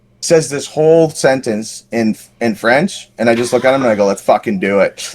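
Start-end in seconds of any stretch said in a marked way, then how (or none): none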